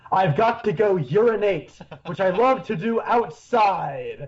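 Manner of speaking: dark, foreboding, ominous, portentous delivery. Describing a scene, quoting what Cooper says: Cooper's line, ominous and loud. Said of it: "he says very ominously and loudly".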